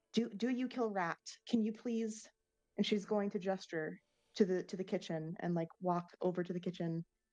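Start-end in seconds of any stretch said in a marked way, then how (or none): 0.1-2.2 imploring, pleading, begging tone. Speaker acting out a woman pleading with her dog about a rat, mock pleading. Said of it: "she's going to plead with the dog".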